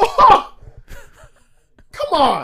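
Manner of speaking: very high, loud shout with big pitch swoops. Imitating a game show host reacting to a stupid answer: Steve Harvey impression. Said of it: "That was your Steve Harvey impression?".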